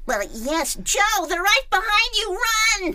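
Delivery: very high, loud, rising cartoon character voice. Speaker demonstrating a higher voice he once performed in a role: higher character voice. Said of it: "But I did this voice".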